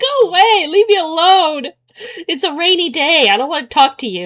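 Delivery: exasperated, fed-up tone. Retelling replies to a man who kept messaging her: retelling a frustrated brush-off. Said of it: "I got so frustrated".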